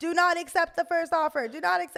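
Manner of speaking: shrill, full-volume, very loud, very high shouting. Retelling the first seconds of an earlier video: imitating own shouting. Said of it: "I'm literally shouting".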